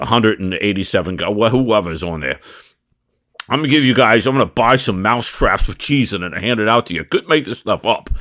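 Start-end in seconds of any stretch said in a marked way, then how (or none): none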